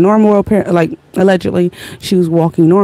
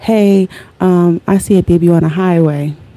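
put-on smooth, silky, chilled-out, unbothered calm voice. Speaker acts out a woman calling 911: imitating a smooth, chill voice. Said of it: "Smooth voice, chilling".

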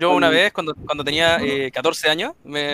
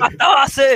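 mock madman yelling, higher and louder; 10 semitones higher, 6 dB louder than usual. Acting out shouting nonsense to scare off muggers: pretend shouting like a madman. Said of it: "empiezan a decir".

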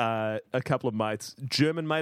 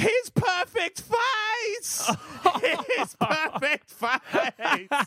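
mock screaming, much higher, slower. Retelling how a girlfriend saw his cut-open face, imitating her screaming. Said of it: "just starts screaming".

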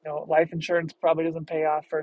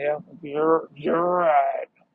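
put-on old-man voice, groggy, sad, louder, slower; 4 dB louder than usual. Retelling how Mike took the insult on the chin, horrible Mike impression. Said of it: "horrible Mike impression ... groggy, sad old man".

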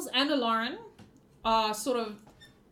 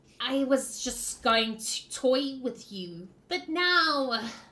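slow, drawn-out creature voice. Voicing the Chitterglax as it threatens the party: Chitterglax voice. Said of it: "the Chitterglax says".

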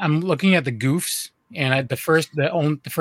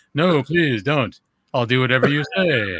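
put-on unconcerned tone with zero urgency. Retelling a line from the movie that should sound concerned: imitating unconcerned pleading. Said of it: "he does not sound concerned at all".

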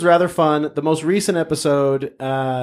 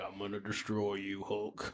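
stoic, very low, hushed, unmoved voice; 7 semitones lower, 21 dB quieter than usual. Imagining a mustached actor cast as the Red Hulk: stoic Sam Elliott impression. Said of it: "He would be quite the stoic Red Hulk".

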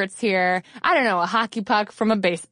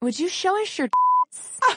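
very high, coy, polite, swooping sheepish tone; 12 semitones higher than usual. Speaker retells a young man coming up to her at the rally, imitating a sheepish young man. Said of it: "a very sheepish young man".

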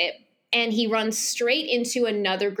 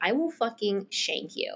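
mock menacing, threatening tone; 5 dB quieter than usual. Acting out a man threatening a woman who took his things, retelling a threat. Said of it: "he's threatening her".

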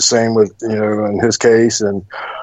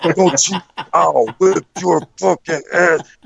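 put-on angry scolding voice, higher; 7 semitones higher than usual. Retelling being scolded through the ropes after a move: imitating Manny chewing him out. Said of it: "he starts laying into me".

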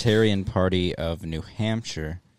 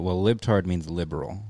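plain

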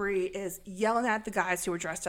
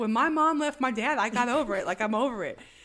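ordinary talk

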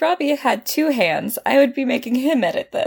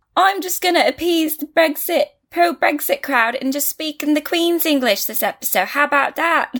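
put-on Cockney accent; 4 semitones higher than usual. Host says he'll speak this whole episode in a put-on cockney accent. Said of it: "It was actually excellent Cockney".

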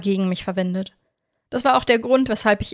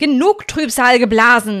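sudden, loud, far-carrying yell; 3 semitones higher, 7 dB louder than usual. Narrator reads him suddenly calling out across the lake, shouting. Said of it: "schrie er auf einmal über den See".

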